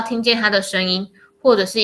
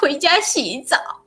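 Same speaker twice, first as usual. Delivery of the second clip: high, near-tearful, pleading voice on the edge of crying; 7 semitones higher than usual. Retelling phoning their dad to come home, acting out a near-crying plea. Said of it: "我几乎是用哭腔说".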